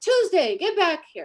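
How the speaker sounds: screamed, high and loud. Retelling how Tyra yelled at a 17-year-old girl, retelling Tyra's scream. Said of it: "She screamed at her and said".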